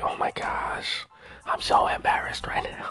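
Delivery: put-on embarrassed whisper. Retelling own embarrassed reaction to a bad episode: imitating own embarrassed whisper. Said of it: "I'm so embarrassed I have to whisper".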